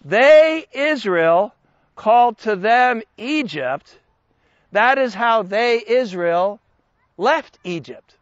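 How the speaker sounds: slow, deliberate delivery. Explaining a Bible passage so listeners can follow, saying it slowly. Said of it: "I'm going to say this slowly".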